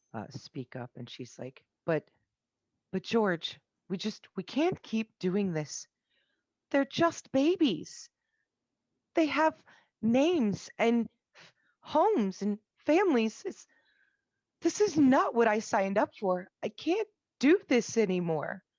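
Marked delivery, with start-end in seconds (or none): 1.8-18.5 very high, loud tearful pleading tone, close to tears. A storyteller voicing Amy, overheard by the listening players, in Amy's tearful pleading. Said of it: "And she just kind of sniffles".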